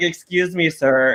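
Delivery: put-on Scottish accent. Retelling what a Scottish flight attendant said: imitating a Scottish accent. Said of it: "in his little accent".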